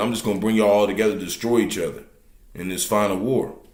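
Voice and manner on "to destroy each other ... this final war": ordinary talk, nothing marked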